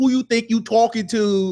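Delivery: put-on heavy New York accent. Acting out an angry character talking back: super thick New York accent. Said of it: "In a super thick, like, ... New York accent".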